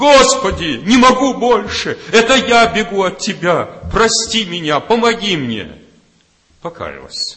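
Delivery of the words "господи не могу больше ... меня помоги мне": very high, loud, sudden crying out. Retelling a woman who jumps up during a sermon, the speaker is retelling her crying out. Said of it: "начинает кричать".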